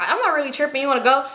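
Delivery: ordinary talk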